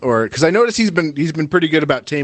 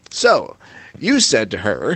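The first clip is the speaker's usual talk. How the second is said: slow, swooping, drawn-out talk-radio host voice; 3 semitones lower than usual. Joking about a TV interviewer's questioning: Chris Hansen talk radio voice. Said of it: "his little, like, talk radio sh-, voice".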